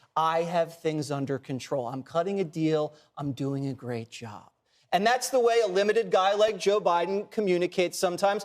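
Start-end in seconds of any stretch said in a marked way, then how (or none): 0.2-4.5 soft, low, soothing, reassuring half-whisper. Listing someone's tells and acting out the third: Joe Biden half-whisper. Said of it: "The third tell is the whisper".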